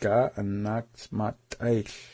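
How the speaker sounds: repeated slowly and carefully.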